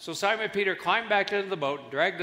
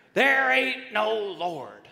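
put-on gruff, rough, angry hollered yell; 4 semitones higher, 3 dB louder than usual. Telling a story, speaker acts out an atheist neighbour answering an old lady, retelling a yell. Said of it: "He would yell back at her".

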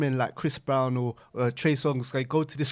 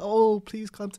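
mocking put-on feminine voice, higher; 8 semitones higher, 3 dB louder than usual. Mocking a performer who kneels and pleads: imitating a put-on feminine voice. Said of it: "we to put some feminine voice on".

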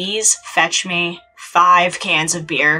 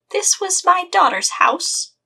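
put-on shrill, very high elderly woman voice; 13 semitones higher than usual. Acting out a scene about Ken-kun, put-on old lady voice. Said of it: "I'm gonna talk in an old lady voice".

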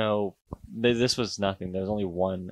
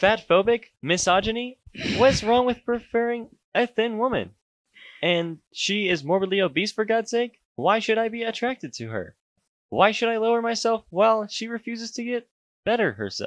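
put-on very high-pitched text-to-speech girl narrator voice; 13 semitones higher than usual. Reading a post aloud as another speaker suggested, in the TikTok AI girl voice. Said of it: "TikTok AI girl voice".

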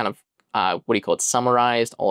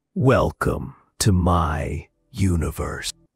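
dark, ominous, foreboding tone; 7 semitones lower than usual. Presenting the final result of the voice generation demo, dark, ominous tone. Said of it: "in a dark, ominous tone".

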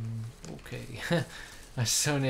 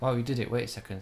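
plain reading voice

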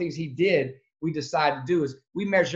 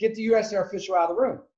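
mild screamed yell, kept contained, acted out; 4 semitones higher than usual. Retelling own words screamed to a priest: retelling own scream. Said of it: "I'm screaming to the priest".

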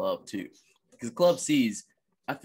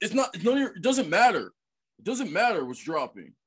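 rude, mimicking tone, pitched higher; 9 semitones higher, 4 dB louder than usual. Retelling how rude people in a sneaker line answered: imitating rude sneaker-line kids. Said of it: "rude people".

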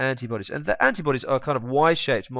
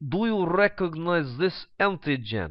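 fake, put-on Russian accent; 4 semitones higher than usual. Explaining immune cells, the speaker voices a phagocyte asking its question, in a put-on Russian accent. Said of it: "I don't know why it would have a Russian accent".

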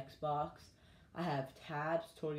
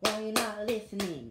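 put-on angry girl voice, louder; 5 semitones higher, 8 dB louder than usual. Doing a comedy bit about how girls talk when mad, imitating an angry girl. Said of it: "they talk like this?".

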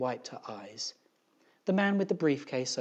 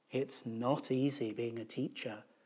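plain reading voice

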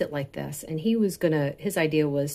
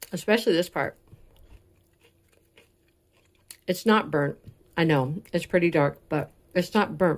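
talking while chewing, mouth full. Tasting food for viewers, next to the microphone: talking while chewing. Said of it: "I'm chewing right next to the microphone".

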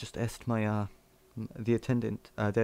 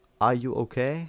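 bad, clumsy put-on broken English accent; 4 dB louder than usual.

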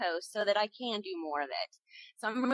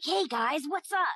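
put-on bubbly, keyed-up kid voice, excited and high energy; 4 semitones higher, 3 dB louder than usual. A voice actor demonstrates a really young character he voiced: excited, very high energy. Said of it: "just very high energy".

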